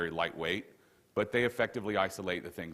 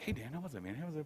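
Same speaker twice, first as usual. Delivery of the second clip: mock puppy-dog eagerness, soft and high; 8 semitones higher, 8 dB quieter than usual. Getting in the car after a talk, retelling own questions: retelling eager puppy-dog self. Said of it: "I'm all puppy dog".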